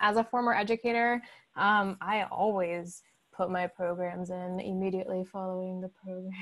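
sarcastic delivery.

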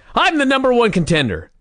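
sudden, shrill, very high screamed outburst. Retelling a wrestling segment where Rick Steiner interrupts: imitating someone screaming. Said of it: "Rick Steiner suddenly screams".

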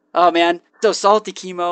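usual speaking voice

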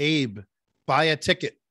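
play-acted, slow, deliberate, drawn-out divine voice. Telling a joke, the speaker voices the answer to a man's prayer in a booming voice of God. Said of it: "he hears this booming voice".

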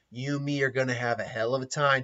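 weird, odd put-on killer-doll character voice. Retelling a Chucky scene, speaking his line: Chucky voice. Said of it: "it sounds like I'm kind of doing a weird Clint Eastwood voice, or Jack Nicholson voice".

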